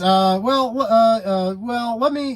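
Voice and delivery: put-on stutter. Retelling a mechanic's evasive answer about the price: imitating someone stuttering. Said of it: "He was stuttering".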